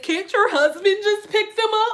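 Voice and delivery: high-pitched, tearful, sobbing voice. Retelling what a late lady said, imitating someone sobbing. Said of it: "She's sobbing, crying, and says".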